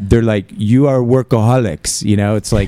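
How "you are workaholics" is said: put-on muddled mixed French and Spanish accent. Describing how other cultures see us, in a mixed French-Spanish accent. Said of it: "What accent was that?".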